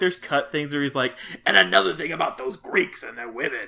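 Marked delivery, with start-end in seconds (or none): 1.5-3.7 rough, roughed-up voice, ranting. Joking about imagined cut movie scenes: rough-voiced Cameron voice. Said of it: "Cameron gets really rough voiced when he says it".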